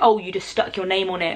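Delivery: ordinary delivery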